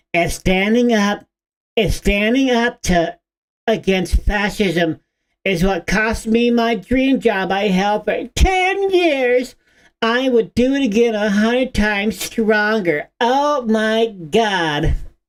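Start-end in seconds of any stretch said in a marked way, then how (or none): 0.1-13.1 put-on mocking poster voice, higher pitch. Reading a post aloud in a mocking voice: mocking Bluesky voice. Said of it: "I must do the blue sky voice".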